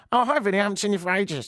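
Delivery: high, really irritating woman's voice. Retelling a woman greeting him while he joked with mates, imitating her annoying voice. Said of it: "She's got a really annoying voice".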